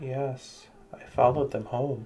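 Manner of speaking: soft, eerie, dead-level monotone. A girl thought dead answers a survivor who greets her, in an eerie monotone voice. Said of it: "says in an eerie monotone voice".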